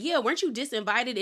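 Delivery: ordinary talk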